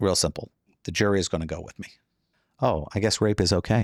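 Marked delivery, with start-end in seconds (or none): 2.6-3.9 slow, sincerely sympathetic tone. Saying the line differently from the other speaker, in a sympathetic tone. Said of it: "I said it with more sympathy".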